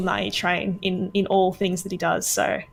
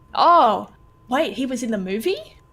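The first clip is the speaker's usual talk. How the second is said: slow, fake astonishment, played as a bit; 4 semitones higher than usual. Pretending not to know an actor was in a movie: mock surprise. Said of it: "I was trying to do a bit".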